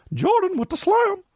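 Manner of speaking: very high-pitched, exclaiming voice pushed way up. Retelling what he would say after a slam dunk, high-pitched Justin McKinnon impression. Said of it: "He would do it in a high pitched voice".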